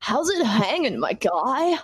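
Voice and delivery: laid-back surfer bro voice. Playing beach bro number one, greeting someone in the scene: beach bro voice. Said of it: "This is how [name] sounds all the time".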